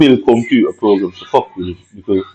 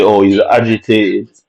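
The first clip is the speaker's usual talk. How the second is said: ordinary delivery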